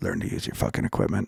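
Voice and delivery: grumbled, muttered under the breath, half to oneself. Recalling a man he was guiding through a recording session: retelling an under-breath mutter. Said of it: "he says under his breath".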